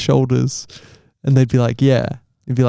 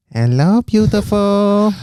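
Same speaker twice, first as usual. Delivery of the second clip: put-on Chinese accent, pitched up; 7 semitones higher than usual. Playing a dating show contestant in a made-up scene: put-on chinese accent. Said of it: "So I'm not just doing an accent".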